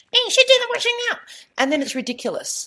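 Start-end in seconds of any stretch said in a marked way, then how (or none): 0.1-1.2 very high, tiny, squeaky helium voice. Voicing the word 'should' as a tiny voice in his head, funny little helium voice. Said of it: "it has this funny little voice like this".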